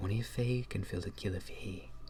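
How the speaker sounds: hushed, soft, close whisper. Voicing a character who leans down to a player's ear: whispering in character. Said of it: "kinda whispers in your ear".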